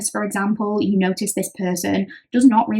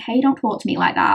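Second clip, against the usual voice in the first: very calm, even, steady delivery. Showing how you might answer someone who starts an argument, calmest voice. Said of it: "in the calmest voice".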